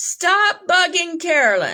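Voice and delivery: loud yelling.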